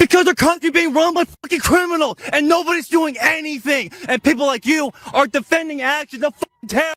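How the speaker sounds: furious yelling. Answering why they are getting so angry: angry shouting. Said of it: "why are you getting so angry".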